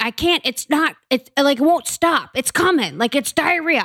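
mock, high-pitched, complaining yelled outburst. Retelling what a woman yelled at 4 a.m.; retelling a yell.

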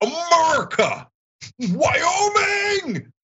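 shrill, very high holler, "Wyoming" drawn out. Recounting how he yelled it in the car and in public, re-enact his own yell. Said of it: "I started yelling it in public".

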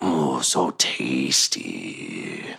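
eerie, low, rasping monster half-whisper. Voicing a creature that drains a player's life: creature half-whispering. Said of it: "you can hear its voice whispering in your head".

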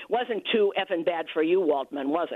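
mock needling, sarcastic little dig. Retelling a phone call with George after an event: imitating George's sarcastic tone. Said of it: "his voice changed, that little sarcastic thing".

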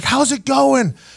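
acted-out, high-pitched screaming. Retelling what the guy asked during the fall: imitating someone screaming. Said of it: "he's screaming at me".

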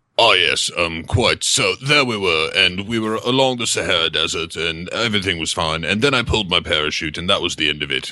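boastful, bragging storyteller voice. Showing how a hipster talks, like Commander McBragg: imitating Commander McBragg. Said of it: "he sounds a lot like this".

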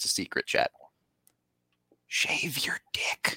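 conspiratorial, secretive, hushed whisper. Speaker tells chat a secret before an ad, whispering it. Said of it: "I'm going to whisper it to you".

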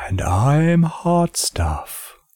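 put-on eerie, spooky haunted-house voice. Introducing themselves on the Kingdom of Loathing podcast, in a spooky Halloween voice. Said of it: "Do you like my spooky Halloween voice?".

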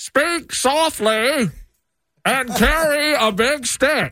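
put-on very high-pitched, old-fashioned recording-style voice. Do a quote for others to guess the old-timey president, in an old-timey telephone-like voice. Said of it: "I'm doing my old-timey".

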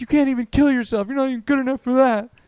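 high, loud, berating yell. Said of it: "And he's like".

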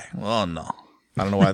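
bad put-on voice with a slight Russian accent. Describing a guy to a friend, in a bad put-on voice. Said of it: "That's not a good Magutsi voice".

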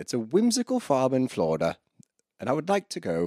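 light put-on English accent, high and swooping. Saying they would like to visit a whimsical farm: light English accent. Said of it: "You don't have to do the English accent".

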